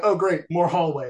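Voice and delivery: ordinary talk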